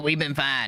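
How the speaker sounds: flat, monotone, emotionless, offended-sounding voice. Retelling a show scene where Joel acts offended: imitating Joel's monotone voice. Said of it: "he said it in his very monotone voice".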